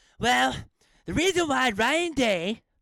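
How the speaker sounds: put-on cartoon kid voice, very high and loud, squealing. Reading out someone's post, in an Eric Cartman voice. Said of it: "I did it in the Eric Cartman voice".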